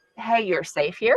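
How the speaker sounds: normal talking voice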